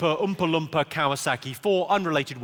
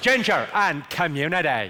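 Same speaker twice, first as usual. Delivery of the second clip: put-on Northern Irish Belfast accent. Teaching the audience a practice phrase for the accent, Belfast accent. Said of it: "to get the Belfast accent right".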